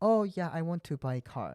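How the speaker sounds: put-on broken English with Korean accent. Telling someone how they spoke at a used car dealership, broken English, Korean accent. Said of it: "like this thing for the Korean accent".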